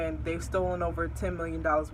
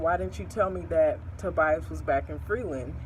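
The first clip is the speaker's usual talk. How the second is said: ordinary talk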